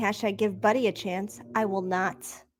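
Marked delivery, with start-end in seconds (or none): none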